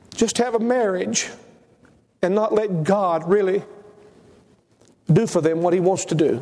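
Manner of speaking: choked-up voice on the verge of crying. Speaker addressing listeners, on the verge of crying. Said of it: "I'm about to cry".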